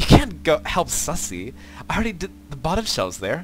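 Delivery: put-on high, pretentious valley girl voice.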